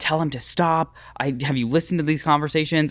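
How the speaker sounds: high, held-back, mild screaming voice. Retelling a phone call from a clinic worker: imitating someone screaming. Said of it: "she's, like, screaming".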